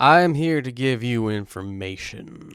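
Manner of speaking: acted character voice with Saxon accent. Voicing a character offering information to another: Saxon tone. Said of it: "Saxon tone".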